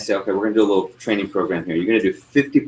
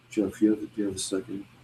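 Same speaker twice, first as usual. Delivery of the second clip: mock-sad puppy-dog voice, quieter; 9 dB quieter than usual. Jeff imitates a trainee asking him for a second, in a puppy-dog-died voice. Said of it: "my puppy dog died voice".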